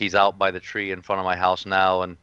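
plain

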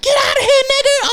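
very high, loud, shrill taunting scream. Retelling a girl yelling from the back of a truck: imitating someone screaming. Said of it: "The chick is in the back of the truck screaming".

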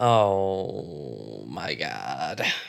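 low, quiet, pained groan. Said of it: "can you hear the pain in my voice?".

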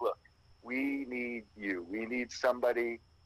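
put-on pleading voice. Recounting how he called a few weeks later, retelling someone begging. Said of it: "called me basically begging".

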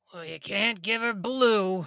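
rabbit character voice. Invited to play the rabbit in a story about a little girl, in a rabbit voice. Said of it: "would you like to do the voice of the rabbit".

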